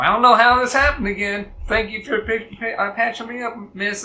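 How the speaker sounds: loud, boisterous, high voice. Voicing a character thanking someone for patching him up: loud and boisterous voice. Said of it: "very loud and boisterous".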